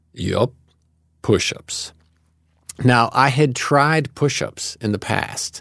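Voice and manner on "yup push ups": imitated deep, powerful voice. Retelling a man's second reply to the speaker, imitating a deep powerful voice. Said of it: "in this incredibly deep and powerful voice".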